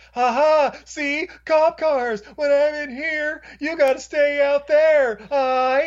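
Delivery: put-on very high, slow, drawn-out taunting shout. Retelling a film scene where a character taunts from inside a diner: imitating someone yelling.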